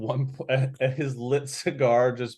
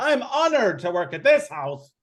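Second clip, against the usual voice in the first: high-pitched, loud, showy voice projected to carry far; 10 semitones higher, 3 dB louder than usual. A character speaks so people out in the hallway can hear, loudly. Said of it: "Nice and loudly".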